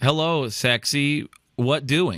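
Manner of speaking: very slow, drawn-out, robotic chatbot voice. Mocking the messages dating-app bots send: imitating a dating-app bot. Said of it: "bots are still very much like".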